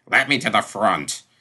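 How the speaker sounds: snarling, snarled. Maud's father plunges past her toward the front, snarling.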